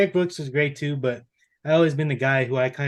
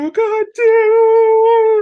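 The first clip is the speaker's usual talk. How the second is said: very high, very loud, frustrated crying outburst; 12 dB louder than usual. Retelling watching the fourth quarter: imitating own frustrated crying. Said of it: "I'm just all frustrated and I'm crying".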